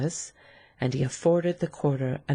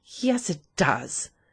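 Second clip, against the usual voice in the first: angry mock imitation of an inflection; 3 semitones higher than usual. A woman throwing a man's words back at him, angry, mocking his inflection. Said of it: "she said angrily, imitating his inflection".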